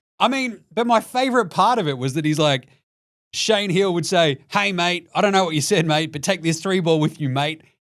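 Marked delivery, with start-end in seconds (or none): 4.5-7.6 put-on Australian accent. Retelling a player's taunt, in an Aussie accent as Shane Heal. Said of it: "as K G's putting on an Aussie accent".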